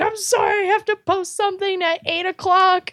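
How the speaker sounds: mock shrill yell, very high-pitched, frantic scream. Recounting having to post online while making drinks in line; retelling a scream. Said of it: "I'm screaming. I'm like".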